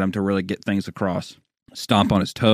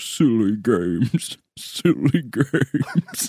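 very slow words chuckled to himself, acted out; 2 semitones higher than usual. Retelling what a housemate said while chuckling in the bathroom: imitating someone chuckling. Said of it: "he was chuckling to himself".

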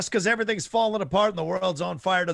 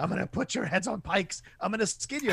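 mock angry alien voice, quieter; 2 semitones higher, 5 dB quieter than usual. Retelling a trailer's alien threatening two kids: imitating an angry alien. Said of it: "the alien is just angry".

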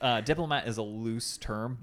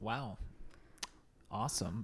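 whispered, breathy, dripping heavy sarcasm; 10 dB quieter than usual. Reacting to hearing about a racist class system: very sarcastic. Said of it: "I mean that very sarcastically".

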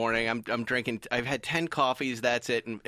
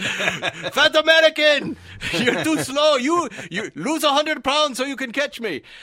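put-on German accent, higher pitch, louder, slower; 13 semitones higher, 9 dB louder than usual. Retelling Hurley screaming at the speaker over a walkie-talkie: Hurley's German accent. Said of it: "he's got a German accent".

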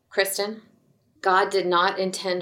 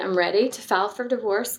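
usual speaking voice

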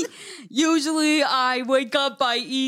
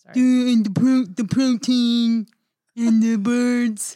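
put-on Austrian accent, louder; 2 semitones lower, 4 dB louder than usual. Doing impressions for friends: Arnold Schwarzenegger impression. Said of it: "That sounds just like Arnold".

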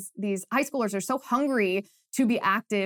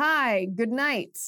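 uncomfortable, awkward politician's podium voice; 3 semitones higher than usual. Opening by imitating a moment from a televised debate: John Fetterman impression. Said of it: "my best impression of the John Fetterman".

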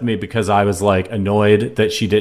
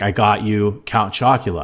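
slow, play-acted proud, self-pleased delivery. Retelling the wife coming home from the store: imitating someone sounding proud. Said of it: "all proud of herself".

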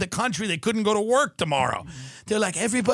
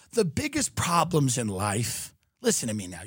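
mock philosophical tone, lower pitch; 8 semitones lower, 4 dB quieter than usual. Switching into a joking philosopher mode to make a point: put-on philosopher voice. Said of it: "You see how I did that with my voice?".

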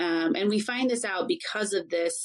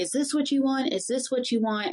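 put-on high, screamed, repeated words; 6 semitones higher than usual. Retelling what someone screamed that left a woman terrified, imitating someone screaming. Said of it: "was like screaming".

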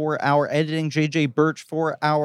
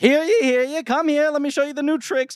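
high-pitched carnival-barker showman voice; 11 semitones higher than usual. Describing a film on TV, the speaker voices a character: carnival barker voice. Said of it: "a character who's like a carnival barker".

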